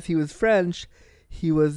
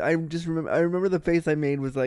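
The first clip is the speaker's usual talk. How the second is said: ordinary talk, nothing marked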